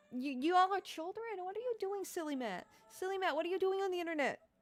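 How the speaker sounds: worked up and baffled. Confused about children being online, calling out one of them: getting heated. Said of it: "I'm only getting heated about this".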